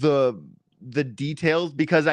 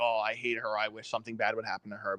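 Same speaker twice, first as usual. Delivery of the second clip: mock mutter under the breath, lower and quieter; 5 semitones lower, 10 dB quieter than usual. Discussing a man who threatened someone, the speaker imitates him muttering under his breath. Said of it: "say under his breath like".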